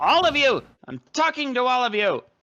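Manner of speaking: testy, confrontational, angry and heated delivery. A character shouts at the whole group, yelling. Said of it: "Why are you yelling?".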